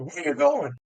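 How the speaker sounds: high, demanding yell. Retelling how a recruiter yelled a question: imitating someone yelling. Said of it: "he yelled at me".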